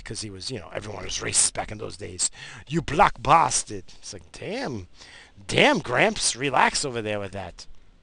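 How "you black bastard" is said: put-on loud, high-pitched, broken Portuguese accent. Speaker imitates a portuguese grandfather's insults in a broken portuguese accent. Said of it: "He had that broken accent".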